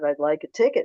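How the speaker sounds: ordinary delivery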